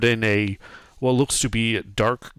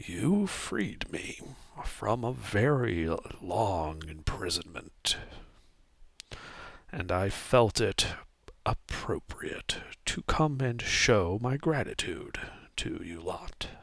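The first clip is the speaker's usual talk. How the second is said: very soft, hushed, rasping voice; 10 dB quieter than usual. Game master voicing a strange unmoving figure speaking to the players: raspy voice. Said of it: "a voice rasp out from it".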